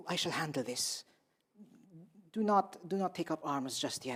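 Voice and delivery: spoken in whispers. A character speaks to companions during a group role-play scene, whispering. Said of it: "speaking in like whispers".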